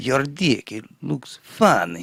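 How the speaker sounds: raspy voice with Russian accent. Asked to say it again, redoing the voice: Rasputin-like raspy Russian voice. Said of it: "put a raspiness in there to make you sound like Russian".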